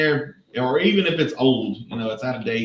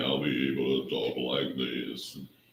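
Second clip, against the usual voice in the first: very deep, soft, low, dropped-down voice; 11 semitones lower, 9 dB quieter than usual. Chatting about the weather turning cooler, the speaker shows off a deeper voice. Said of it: "I'm getting my deeper voice".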